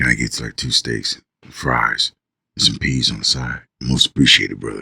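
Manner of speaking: very low, sultry, seductive voice. Imitating a soldier ordering food at the chow hall: imitating a seductive voice. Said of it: "make love to you with his voice".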